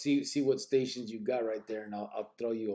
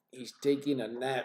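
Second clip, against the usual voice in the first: plain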